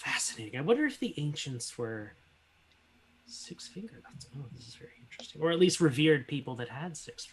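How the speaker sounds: very quiet muttering under the breath. Voicing a character examining handprints while taking notes: mumbling to himself. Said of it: "He's just mumbling and taking notes".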